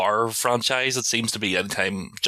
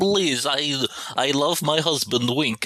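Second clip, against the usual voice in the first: pleading in a high, lifted, put-on voice; 5 semitones higher than usual. Playing along with a remark on the voice: Melania Trump voice. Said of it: "she sounds a bit like Melania Trump".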